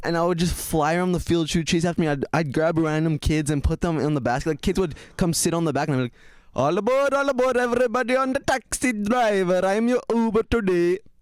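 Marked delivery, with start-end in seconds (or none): 6.5-11.0 yelled, high, drawn-out, put-on Indian accent. Recalling giving kids rides as a child, speaker yells in a random Indian accent. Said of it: "I just start yelling in a random Indian accent".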